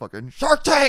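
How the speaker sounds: mock frustrated outburst. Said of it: "caricature of frustration".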